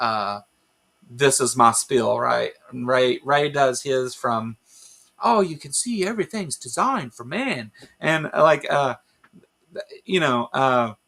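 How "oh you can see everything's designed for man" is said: put-on Australian accent, best attempt, pitched up. Describing the spiel Ray Comfort does: Ray Comfort impression. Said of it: "that was my best Ray Comfort impression".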